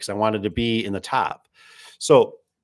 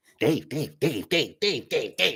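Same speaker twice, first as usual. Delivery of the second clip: put-on chatty guy voice, much higher; 4 semitones higher, 5 dB quieter than usual. Describing a talkative guy who kept coming over, imitating a yacky guy. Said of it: "just real yacky".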